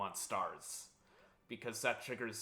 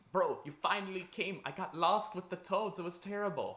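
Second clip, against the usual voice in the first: horrible, clumsy, pitched-up put-on cartoon character voice; 8 semitones higher than usual. While playing the Mario game, the speaker voices Luigi: horrible Luigi voice. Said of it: "that was a horrible Luigi voice".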